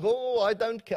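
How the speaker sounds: put-on South African accent. Retelling a man who insists on preaching at a small service, imitating a South African accent. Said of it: "I'm doing my South African accent".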